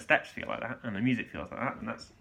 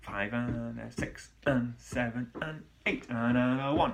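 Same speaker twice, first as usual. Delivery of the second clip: punchy, strong, emphatic accented counting. Showing how to count in a strong tango for an accented step: strong accented counting. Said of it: "count in a strong way".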